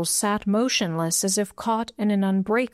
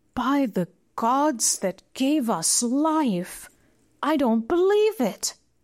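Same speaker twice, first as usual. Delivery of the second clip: stunned, startled gasp of disbelief, high; 5 semitones higher than usual. Watching the giant settle the chain about his neck, gasping in startled disbelief. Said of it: "gasped in startled disbelief".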